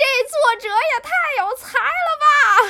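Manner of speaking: excited yell, shrill, very loud, high and drawn-out. Recalling first reading a concept in a book, retelling a loud shout. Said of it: "大喊".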